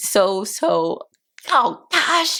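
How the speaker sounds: voice catching, choked up, holding back tears. Speaker talking to her audience, getting choked up. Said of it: "I'm getting choked up".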